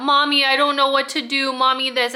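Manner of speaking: mock blubbering, bawling, sobbing through tears. Retelling a grown son's plea to his mother: imitating bawling. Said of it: "he was bawling his eyes out".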